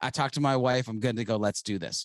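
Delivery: ordinary talk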